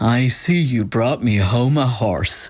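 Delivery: put-on Cavan accent. Retelling what her dad said when she brought the dog home, Cavan accent. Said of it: "with his Cavan accent".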